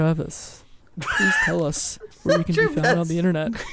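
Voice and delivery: playful, put-on bedroom pillow-talk voice. Turning to a fellow host on the show, speaking in your best pillow-talk voice. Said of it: "in my best pillow talk voice".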